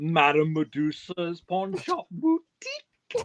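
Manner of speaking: loud cartoon voice with big pitch swoops. Unsure they can still do it, the speaker tries a Madame Medusa voice. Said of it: "the one from Rescuers first".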